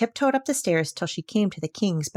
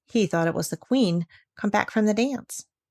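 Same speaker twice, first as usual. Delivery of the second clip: ordinary delivery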